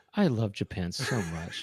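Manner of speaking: soft, close, personal, intimate delivery. Repeating back how the other speaker said a line, imitating an intimate tone. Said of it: "it sounded so intimate in a way".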